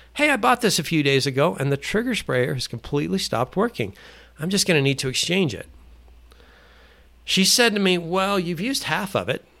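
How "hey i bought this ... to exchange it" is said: put-on, bright friendly voice. Retelling what they told her when asking for an exchange, in a put-on friendly voice. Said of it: "I put on my best friendly voice".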